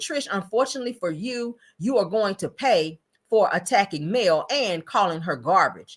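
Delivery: ordinary talk, nothing marked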